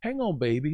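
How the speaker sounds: very Southern, sweet Louisiana drawl. Retelling what a test nurse said: imitating a sweet southern louisiana voice. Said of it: "very Southern, sweet, a L-, Louisiana flair".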